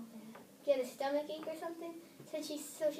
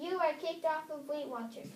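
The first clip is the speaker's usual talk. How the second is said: plain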